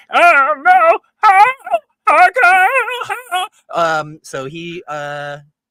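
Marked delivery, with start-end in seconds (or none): 0.2-3.5 stuffed-mouth voice, very high, very loud, very slow. Voicing a character whose mouth is propped open with asparagus spears: voice with mouth stuffed open. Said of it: "just sounds like that now".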